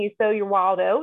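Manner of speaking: plain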